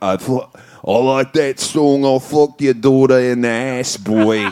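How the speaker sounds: weird put-on pirate-like accent. Retelling what a celebrity said after a show, imitating Russell Crowe's accent. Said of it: "I don't know what that accent was".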